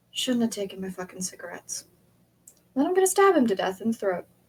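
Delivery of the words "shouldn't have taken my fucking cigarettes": low, hushed, menacing mutter, just audible. A player's character speaks to a man, low, just loud enough to hear. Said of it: "low enough so he can hear".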